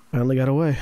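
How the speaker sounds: quiet, muttered aside. Voicing a character kneeling by a body, muttered under his breath. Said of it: "under his breath".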